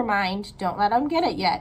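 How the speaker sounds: ordinary delivery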